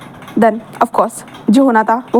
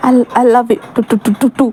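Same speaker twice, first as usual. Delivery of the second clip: put-on scared, frightened stammering. Retelling a story, the speaker acts out the girl answering the boy, imitating a scared stammer. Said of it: "बहुत ज़्यादा वो हकला रही थी, बहुत ज़्यादा डर लग रहा था".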